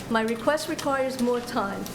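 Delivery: ordinary delivery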